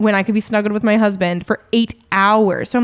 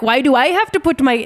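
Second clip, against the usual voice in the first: bad put-on Irish accent sounding Indian, much higher; 4 semitones higher than usual. Speaker retells people complaining about coats: failed Irish accent, sounds Indian. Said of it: "that's still Indian".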